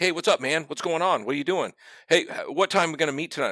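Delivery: mock, very high, chipper and bubbly voice. Recalling a man who came over mid-game chatting; imitating a chipper, bubbly friend. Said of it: "is just kind of like all chippy".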